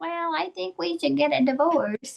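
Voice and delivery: put-on tiny, girlish high voice. Speaker recounting what Orion said, done in Orion's little girl voice. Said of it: "in his little little girl voice".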